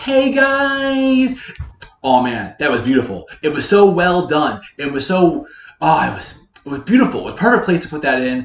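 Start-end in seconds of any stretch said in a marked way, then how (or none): 0.0-1.4 put-on squeaky, very high teen voice, guys stretched. Describing a performer shifting into a teenager, quoting him: high teenage voice. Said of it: "where he had a high voice".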